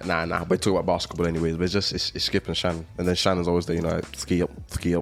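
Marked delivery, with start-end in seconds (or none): 4.1-5.0 put-on lisping commentator voice, pitched much lower. Talking about Skip and Shannon, show how he talks in a lisping Shannon impression. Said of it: "That's how he talks. I think he has a little lisp".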